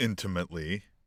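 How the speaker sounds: "intimately" leaned on hard, heavy stress. Reply to someone by raising another interesting part, with stress on intimately. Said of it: "I stress the word intimately".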